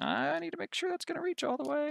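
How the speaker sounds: high worried voice.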